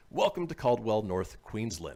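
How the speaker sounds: ordinary talk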